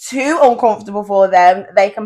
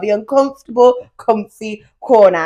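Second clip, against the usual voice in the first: slow, careful, deliberate word-by-word enunciation. Host says the segment name for a guest: said slowly. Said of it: "So we have to say it slow".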